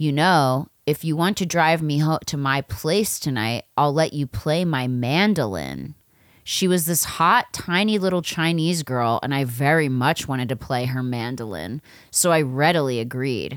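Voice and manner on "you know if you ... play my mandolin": put-on seductive, sexy voice, lower pitched. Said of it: "she said in a sexy voice".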